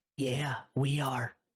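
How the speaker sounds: whispering voice. Sneaking up to a character's ear in the dark: whisper. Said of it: "I get right up into Fiacre's ear and I whisper".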